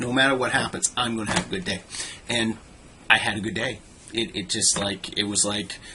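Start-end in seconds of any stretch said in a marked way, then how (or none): none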